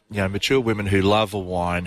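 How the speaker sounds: ordinary talk, nothing marked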